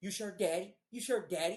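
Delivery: play-acted snide, sarcastic, needling teasing tone. Retelling how an ex-girlfriend mocked after reading texts: imitating sarcastic ex-girlfriend. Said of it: "she's sarcastically calling me daddy".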